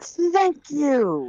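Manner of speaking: very high, loud, sudden exclamation. Voicing a character agreeing with a reminder: saying loudly. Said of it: "Aroden says loud".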